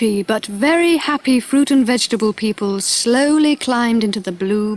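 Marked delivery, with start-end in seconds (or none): none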